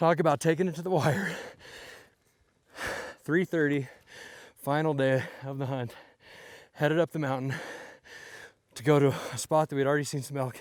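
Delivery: out of breath. Narrating the final day of the hunt while heading up the mountain, out of breath. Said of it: "Catch my breath".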